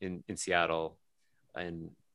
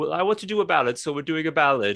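very high, loud put-on German accent; 9 semitones higher, 8 dB louder than usual. Retelling a show, the speaker quotes the performer in a German accent. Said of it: "I don't know why I'm doing a German accent".

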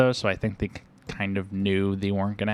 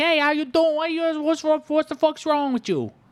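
mock New York New Jersey accent, much higher; 3 dB louder than usual. Discussing the accents in a movie, the speaker mimics its characters in a New York Jersey accent. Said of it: "talking in like the New York Jersey accent".

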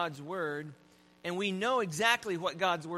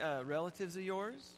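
sarcastic, jabbing little dig; 7 dB quieter than usual. Telling a joke about an angry couple driving: retelling a sarcastic jab. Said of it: "the woman says sarcastically".

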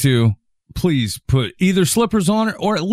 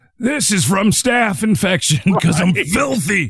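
put-on voice of an old gold prospector character; 4 semitones higher than usual. Mocking a politician who went barefoot on a flight, old prospector voice. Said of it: "sounded like an old prospector".

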